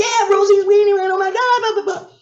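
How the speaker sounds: high, fast, thrilled gushing fan voice. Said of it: "it was like".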